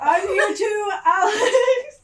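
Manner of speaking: high, loud shout while laughing.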